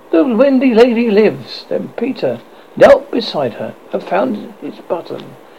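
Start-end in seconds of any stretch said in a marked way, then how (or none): 0.1-1.6 high, cried-out announcing voice. Narrator reading Slightly's reply right after Peter speaks, cried out. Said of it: "Slightly cried instantly".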